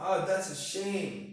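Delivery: sad, sorrowful, let-down, downcast tone. Demonstrating to learners how to reply to bad news, with a sad tone. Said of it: "with a sad tone".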